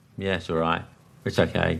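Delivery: lukewarm, unimpressed approving tone. Showing how a positive reply can sound bad: lukewarm approval. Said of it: "sometimes it can sound bad".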